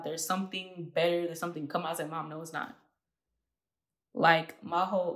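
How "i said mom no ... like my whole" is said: on the verge of crying, choking up. Recalling crying together with the speaker's mom, the speaker is choking up, about to cry. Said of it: "I feel like I'm about to cry".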